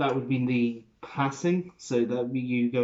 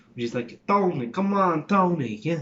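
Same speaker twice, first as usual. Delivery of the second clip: slow, drawn-out Italian New York accent; 5 semitones higher than usual. Running through accents in conversation, giving the new york italian accent. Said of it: "you've got the New York Italian accent".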